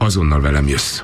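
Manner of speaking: ordinary delivery, nothing marked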